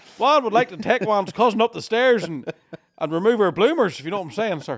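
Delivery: loud, high, put-on lah-di-dah posh Ballymena accent. Answering a question about how a posh Ballymena accent sounds: put-on posh Ballymena accent. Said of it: "it's just the same accent with the finger up".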